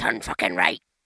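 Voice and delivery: put-on big, very low, loud Scottish accent. Imitating a swearing sat-nav voice: imitating a big deep scottish accent. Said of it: "in a big, deep Scottish accent like that".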